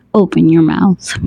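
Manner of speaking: usual speaking voice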